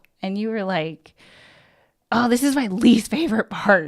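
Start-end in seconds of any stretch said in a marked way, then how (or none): 2.1-3.9 put-on snappy, snapping delivery. Retelling how the other speaker snapped at a question: imitating someone snapping. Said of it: "snapped at me".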